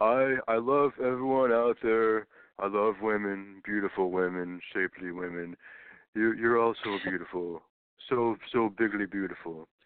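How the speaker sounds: slow, drawn-out put-on voice. Joking about the Women's March speakers: Donald Trump impression. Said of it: "I've been trying to work on my Trump impression".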